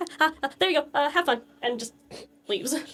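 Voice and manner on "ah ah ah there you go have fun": flustered, embarrassed, stumbling hurry, quick and pitched up. Voicing a blushing character handing something over and leaving: flustered and nervous. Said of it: "he's got this huge blush on his face".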